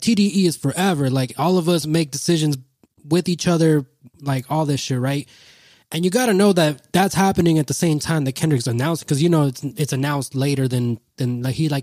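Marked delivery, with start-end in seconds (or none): none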